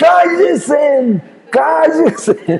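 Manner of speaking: high, loud, shouted demon voice. Retelling how a demon reacted to people praying: imitating a demon shouting. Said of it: "empieza el demonio a gritar".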